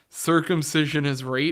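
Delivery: ordinary talk, nothing marked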